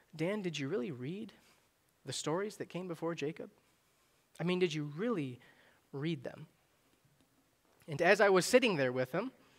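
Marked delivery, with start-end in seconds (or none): 0.2-6.5 mock loving, very affectionate tone. Retelling the pastor's reply to the speaker: imitating a loving tone. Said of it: "very lovingly".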